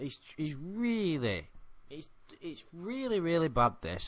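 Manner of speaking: stuttering. Describing a man's manipulation of a woman, the speaker keeps stuttering. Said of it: "I'm sorry to stutter so much".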